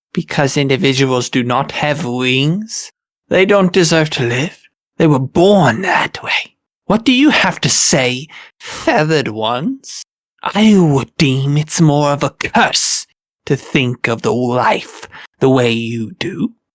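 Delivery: slightly angry, cool slipping, composure cracking, flash of temper. A player voices Ruin confronting the feathered ones, losing his cool a little. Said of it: "So me, and I'm going to extend my forearms, being wingless, deserves to die? / I follow a queen who is powerful, who is strong, and does what she thinks is right for her people. / Um, [name]'s gonna l".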